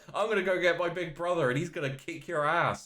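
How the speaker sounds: put-on high, loud voice of a fourteen-year-old boy. Describing a Pokémon as a fourteen-year-old kid: imitating a fourteen-year-old kid. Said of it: "fourteen-year-old kid who's like".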